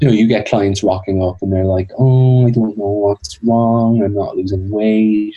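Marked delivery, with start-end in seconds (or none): 2.0-5.4 put-on lonely, young, childish voice, slower pace. Describing clients who put themselves in a victim position: lonely, young, childish voice. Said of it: "they sound really lonely like this, and can kind of sound quite young and childish".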